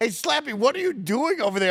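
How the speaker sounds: put-on mild half-yell, called across a room. Retelling yelling at Andy when a place was closed: retelling a yell at Andy. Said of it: "I'm yelling at Andy".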